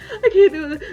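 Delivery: high, tearful, crumbling, defeated sobbing cry. Retelling begging mother not to leave, imitating own sobbing plea. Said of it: "a sobbing mess".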